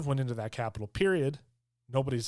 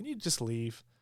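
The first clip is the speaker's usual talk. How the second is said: very calm, polite, quiet voice; 2 semitones lower, 6 dB quieter than usual. Retelling how a security guard told the Buffalo guy to leave, imitating a calm request. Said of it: "Very calmly".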